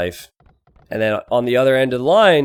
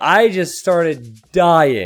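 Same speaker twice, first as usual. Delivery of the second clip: ordinary talk, nothing marked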